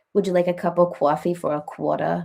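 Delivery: New York City accent. Asking someone if they talk like this: Long Island accent. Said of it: "do you have a New York accent, like Long Island?".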